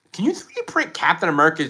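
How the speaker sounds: voice breaking, cracking up high. Speaker asks viewers what Marvel items to 3D print; voice cracking. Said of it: "did you hear my voice crack?".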